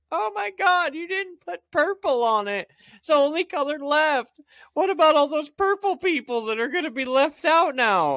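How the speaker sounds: mocking, high, whiny, offended-sounding voice.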